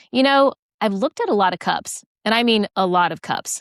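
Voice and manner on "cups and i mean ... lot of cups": ordinary talk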